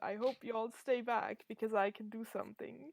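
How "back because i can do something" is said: normal talking voice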